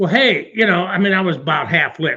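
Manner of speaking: ordinary talk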